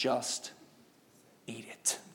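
quiet whispered voice. Showing how a parent answers a complaining kid: lowered voice. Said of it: "You gotta lower the voice".

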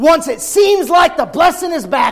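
high, loud shout. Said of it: "repeated calmer at line 54".

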